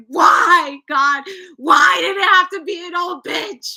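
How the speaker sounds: shrill scream at the top of the lungs. Retelling when an old lady was staring at her: retelling a scream. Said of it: "I was screaming at the top of my lungs".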